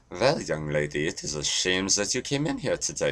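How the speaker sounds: put-on German accent. Telling a joke and trying the accent once more: put-on German accent. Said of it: "that is a better German accent".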